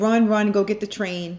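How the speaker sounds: ordinary talk, nothing marked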